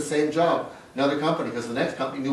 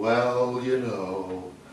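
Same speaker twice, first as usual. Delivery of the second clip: downcast, gloomy, deflated, self-belittling tone; 4 semitones lower than usual. Imitating accomplished workplace people with the Eeyore issue, mock-deflated tone. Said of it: "what I call the Eeyore issue".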